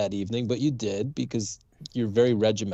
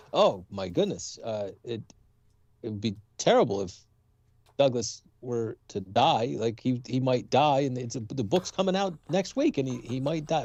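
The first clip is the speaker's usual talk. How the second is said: ordinary delivery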